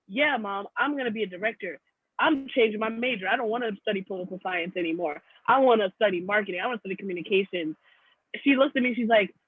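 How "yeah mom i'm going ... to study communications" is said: normal talking voice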